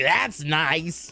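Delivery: mock, put-on sarcastic tone. Retelling what the canvasser said back to them, mock-sarcastic canvasser. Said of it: "he's trying to be all sarcastic".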